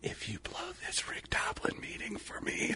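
imitated whisper. Retelling what was said into someone's ear: retelling a whisper. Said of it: "and then I whispered in her ear".

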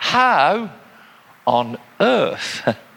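emphasis on "how on earth", pulled apart with a pause. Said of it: "with the appropriate emphasis".

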